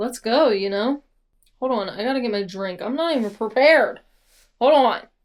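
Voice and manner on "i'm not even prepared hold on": loud shouting with raised voice. Host stops to grab a drink before starting, addressing listeners: yelling. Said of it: "I'm so sorry for yelling at you".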